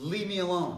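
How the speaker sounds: forceful, firm, loud, strong-voiced delivery. Looking someone in the eye to answer them, firm, stronger voice. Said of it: "now with a stronger voice".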